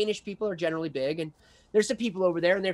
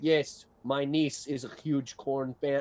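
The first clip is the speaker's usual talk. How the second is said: fake Russian accent, deep, slow and unhurried; 4 semitones lower than usual. Retelling what a big Danish guy said to him, in a put-on Russian accent. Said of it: "so I'm just going to sound Russian".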